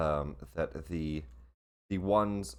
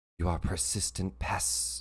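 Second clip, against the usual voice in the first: hushed, whispered voice; 3 dB quieter than usual. Narrating a fantasy scene, voicing an intangible creature speaking to the players: whispering voice. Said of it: "you hear a whispering voice as that happens".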